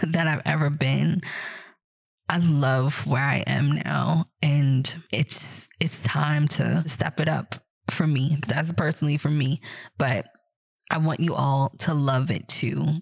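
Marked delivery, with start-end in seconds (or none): 0.0-8.4 slow, choked-up voice near tears. Thanking the audience for their grace: about to cry. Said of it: "oh my God, I'm gonna cry".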